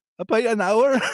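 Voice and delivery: put-on odd mixed accent, partly Scottish. Telling a joke, the girl with a fake Rolex answers in an odd mixed accent. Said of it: "can I ask what accent that was you were doing".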